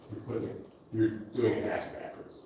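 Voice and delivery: soft, voiceless, choked-up voice, emotion held back. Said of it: "I'm gonna get emotional here".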